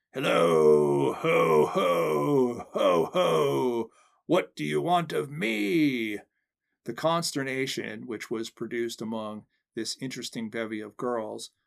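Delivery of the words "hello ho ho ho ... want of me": hoarse, loud roaring bellow, very slow and drawn out. A man in full costume stalks into a room of girls, bellowing loud and hoarse. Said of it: "bellowing in a loud and hoarse voice".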